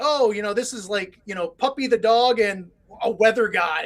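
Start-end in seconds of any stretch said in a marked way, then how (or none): none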